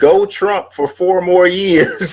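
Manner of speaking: very high-pitched, showy promo announcer voice. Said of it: "you sound like you about to say".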